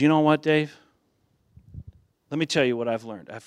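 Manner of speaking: fast, grave, earnest, confiding tone. Dave retells what a man told him over coffee, imitating a serious tone. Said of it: "he kind of had this serious tone on him".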